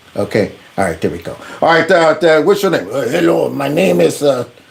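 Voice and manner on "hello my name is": fake Ukrainian accent, lower pitch. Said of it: "work on your Ukrainian accent".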